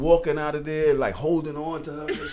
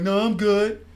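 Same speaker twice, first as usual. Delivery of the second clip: higher-pitched, odd put-on woman's voice; 5 semitones higher than usual. Retelling her reply to coming along for results: imitating her voice. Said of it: "Why her voice like that?".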